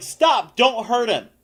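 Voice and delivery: high-pitched woman's voice yelling out. Storyteller voices a lady from a group of people yelling toward the listeners, woman yelling. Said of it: "a lady's voice ... yelling".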